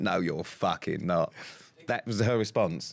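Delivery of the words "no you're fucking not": put-on laughing voice, lower pitch. Retelling her mum's reaction to hearing she'd do Strictly, laughing. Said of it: "She literally spent about 30 seconds laughing and went".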